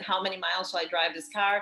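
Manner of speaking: ordinary delivery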